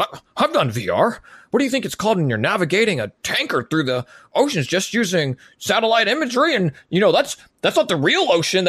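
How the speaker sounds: very high, swooping ship captain voice. Speaker retells dad defending VR to mom, imitating John's captain voice. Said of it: "sometimes he puts on his captain's voice and he goes".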